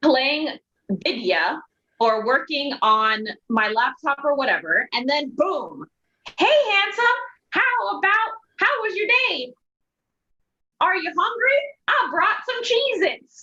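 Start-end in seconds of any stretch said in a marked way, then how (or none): 6.4-13.4 very high-pitched puppet voice. A man retelling how she surprises him while he works, high-pitched Grover-esque Muppet voice. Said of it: "high-pitched, Grover-esque Muppet voice".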